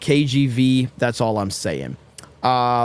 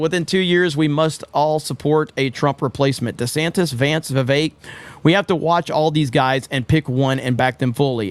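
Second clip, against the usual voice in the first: ordinary talk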